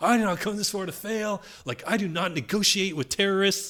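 very high-pitched yelling. Recalling a cold shower, speaker reenacts their self-talk: retelling yelling at themself. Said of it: "I was like yelling at".

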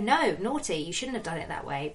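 usual speaking voice

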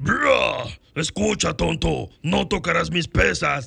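slow, rough, dim-sounding grotesque strongman voice. Showing the voice that fits an image of a strong, grotesque guy: voice of a strong, grotesque guy. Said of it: "la voz de un tipo".

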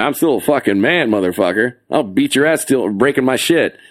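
put-on tough, threatening macho voice. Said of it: "I was puffing my chest out".

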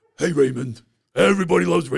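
rough, creaky, raspy, gruff put-on voice. Joining an improvised chat with a cast member voice: Brad Garrett impression. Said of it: "I thought I'd throw a Brad Graf".

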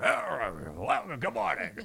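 rough, gravelly tone. Retelling how the station founder greeted staff: imitating a boss's gravelly voice. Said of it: "he had that gravelly voice and had everybody on edge".

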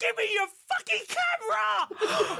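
very high-pitched shrill yelling. Retelling Wanda Scoggins lunging for your camera: mock yell as Wanda Scoggins. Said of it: "she just yells, shaking her fist like".

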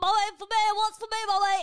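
very high, giddy, eager, excited voice. Telling how Bernie reacted to a takeaway, voicing Bernie with put-on excitement. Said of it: "she got all excited".

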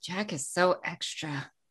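muttering under breath. In a tabletop game, [name] remarks on Jack, muttered under her breath. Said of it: "says under her breath".

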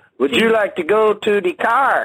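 slight put-on Spanish accent. Showing how people add an accent to be understood: fake Spanish accent. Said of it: "put a little salsa in when you talk".

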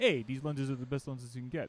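terrible put-on voice, dropped deep and low. Recounting an embarrassing scene, doing a Michael impression. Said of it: "This is a terrible impression of Michael".

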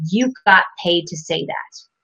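usual speaking voice

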